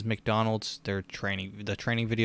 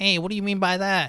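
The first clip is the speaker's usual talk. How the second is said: very high-pitched, loud squeaky voice; 11 semitones higher, 6 dB louder than usual. Retelling a scene, quoting the little guy in the wheelchair in a squeaky voice. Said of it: "he had that squeaky voice".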